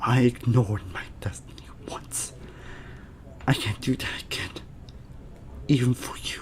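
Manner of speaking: soft, hushed whisper.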